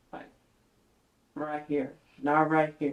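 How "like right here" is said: lowered voice, much quieter. Speaker worried about talking too loud, trying a lowered voice. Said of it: "I need to like lower where my voice is".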